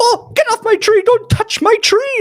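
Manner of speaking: shrill, very high, loud furious gnome shouting. Voicing a gnome who sees someone climbing his tree: angry gnome yelling in Gnomish. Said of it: "in, uh, Gnomish, he goes".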